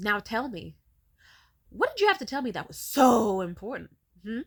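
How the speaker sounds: mock booming, very loud, angry, fed-up, impatient voice. Retelling how she stormed over, hands on hips: imitating an angry, impatient demand. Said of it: "with her hands on her hips, she storms my direction and she says".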